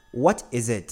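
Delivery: plain reading voice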